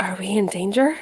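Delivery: whispered, in a character voice. Voicing a character looking at a blade: whispering in character. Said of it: "she'll just whisper".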